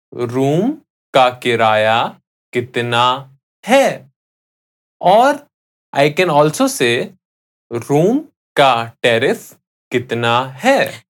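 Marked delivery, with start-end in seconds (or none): 0.2-4.1 slow, deliberate, carefully spaced-out repetition. Teaching a Hindi sentence, the speaker repeats it for the listener: said again slowly. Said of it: "I'll say that again slowly".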